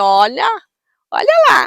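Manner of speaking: loud, playful, teasing mock tone.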